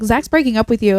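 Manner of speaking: ordinary talk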